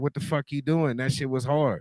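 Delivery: ordinary talk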